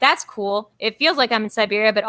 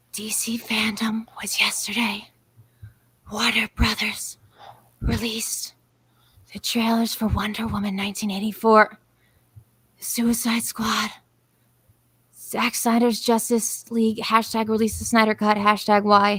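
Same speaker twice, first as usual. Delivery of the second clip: mock ASMR-style reading delivery; 5 dB quieter than usual. Reading out DC FanDome trailer news on the show, like ASMR. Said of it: "I'm going to read it like A S M R".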